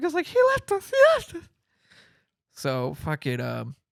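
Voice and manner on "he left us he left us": put-on very high, shrill, rushed, frightened little-girl voice. Retelling freaking out when left alone in the car, imitating the Jurassic Park little girl. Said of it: "I'm like the little girl from Jurassic Park".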